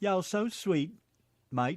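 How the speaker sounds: mixed British and Tennessee accent. Urged by another speaker to try it, speaker does a british tennessee accent. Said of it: "Do a British Tennessee accent".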